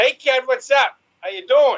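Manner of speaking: very high-pitched put-on Boston accent. Trying out accents, switching from new york to boston: put-on boston accent.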